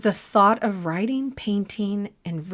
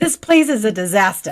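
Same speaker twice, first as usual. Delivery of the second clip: put-on booming, very loud Boston accent; 8 dB louder than usual. Retelling a messy move, quoting John in John's Boston accent. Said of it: "John says in his Boston accent".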